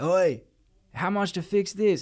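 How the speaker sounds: very high, drawn-out, far-carrying yell. Speaker retells a man with a gash in his head calling out, retelling a yell. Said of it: "And the guy just yells at".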